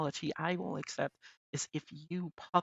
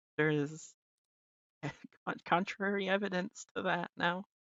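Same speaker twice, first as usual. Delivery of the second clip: voice breaking and cracking mid-line. Answering another speaker's denial during a call: voice cracking. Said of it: "Your voice is cracking".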